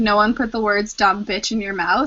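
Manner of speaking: ordinary talk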